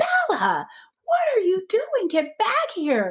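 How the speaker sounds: mock very high screaming, pitch wildly swinging. Retelling how her dog slipped its collar and ran off: retelling screaming at her dog.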